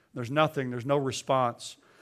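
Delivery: normal talking voice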